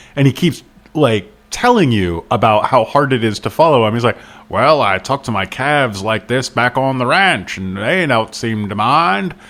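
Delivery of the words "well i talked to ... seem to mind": clumsy, bad, fake Maine accent. Describing a long rambling speech by an old man, bad Maine accent. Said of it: "I just did him as like my bad Maine accent".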